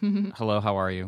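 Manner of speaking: mock, very robotic tone. Retelling the first text sent to Olivia: imitating a very robotic tone. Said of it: "very robotic".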